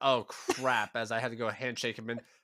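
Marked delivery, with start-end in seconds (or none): none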